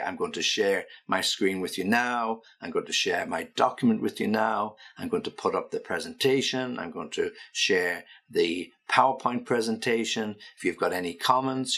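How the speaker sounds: usual speaking voice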